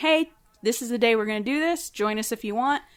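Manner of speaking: usual speaking voice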